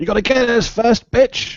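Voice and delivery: very high, loud shout. Answering a witch's threat in character: shouting back at a witch. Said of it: "I'll shout back in Elvish".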